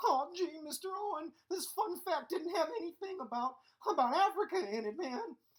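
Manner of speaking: very high, goofy cartoon-style voice. In his Africa video, the presenter has Shaggy interrupt his lecture: Shaggy voice. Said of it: "What are you doing in my Africa video, Shaggy?".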